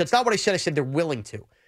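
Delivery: ordinary talk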